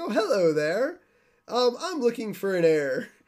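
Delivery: swooping, sing-song character voice with swinging pitch. Retelling a commercial where Mister Burns seeks an heir: Mister Burns voice. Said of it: "he walks out into the grass like".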